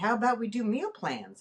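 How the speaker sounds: usual speaking voice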